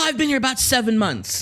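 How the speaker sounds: put-on heavy, thick, laid-on Spanish accent. Speaker retelling what a waiter told customers, in a thick Spanish accent. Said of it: "with his thick Spanish accent".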